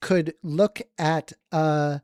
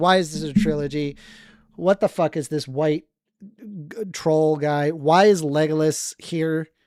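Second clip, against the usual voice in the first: normal talking voice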